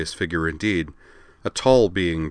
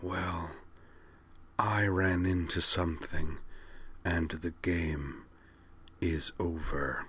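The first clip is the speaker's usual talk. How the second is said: very quiet, hushed, eerie, otherworldly murmur; 13 dB quieter than usual. A narrator reads the being's reply to Derek: hushed, eerie Kosh voice. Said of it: "a rather hushed and eerie voice".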